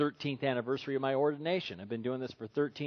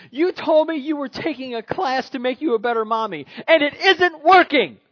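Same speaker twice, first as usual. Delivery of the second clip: put-on very high, shrill, very loud child's scream; 12 semitones higher, 13 dB louder than usual. Retelling a story of a six-year-old's tantrum at church: imitating a child screaming. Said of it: "screams out at the top of her lungs".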